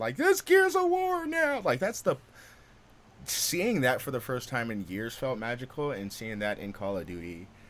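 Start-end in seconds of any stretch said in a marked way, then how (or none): 0.2-1.6 put-on shrill thrilled scream, very loud, high. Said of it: "it was excited".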